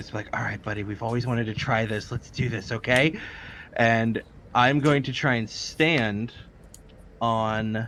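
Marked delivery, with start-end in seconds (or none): 0.4-3.2 whispered, in a character voice. Leaning forward to whisper to a buddy before trying something: whispering in character. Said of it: "lean forward and whisper into Steven's ear".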